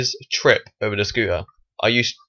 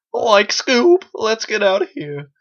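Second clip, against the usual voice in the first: very high voice, breaking on the last words; 12 semitones higher, 3 dB louder than usual. Doing a Shaggy impression after the other speaker says they can't. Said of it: "That's my Scooby-Doo".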